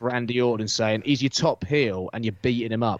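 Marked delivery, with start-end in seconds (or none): none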